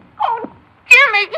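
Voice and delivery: high, loud, tearful sobbing. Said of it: "There's nothing to cry about".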